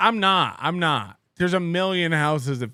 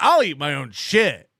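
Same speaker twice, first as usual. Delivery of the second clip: put-on, offhand, tossed-off joking tone; 4 dB louder than usual. Retelling own past words said as a joke: imitating own joking tone. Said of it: "but I said it as a joke".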